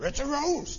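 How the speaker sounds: high-pitched cartoon dog voice. Discussing a Bible passage, the speaker slips into a quick impression: Scooby-Doo impression. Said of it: "It's my only impression".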